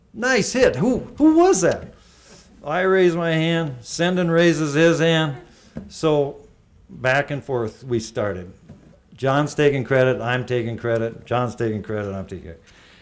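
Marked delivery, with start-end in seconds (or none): 0.2-2.0 put-on loud, high, swooping coach yell. Recalling watching game film, retelling what the coach yelled out: retelling the coach's yell. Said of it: "Coach Shaver yells out".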